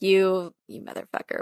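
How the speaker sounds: mock condescending tone. Showing the tone a film wife does not use: imitating a patronizing tone. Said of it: "a patronizing".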